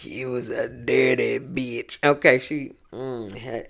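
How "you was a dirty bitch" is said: put-on deep bass voice. Retelling what a cast member said in a quarrel: imitating a deep bass voice. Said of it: "had that bass in her voice".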